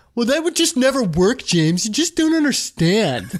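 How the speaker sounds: put-on teenager voice. Acting out answering James's suggestion as a teenager, in my teenager voice. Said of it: "that was kind of like my teenager voice".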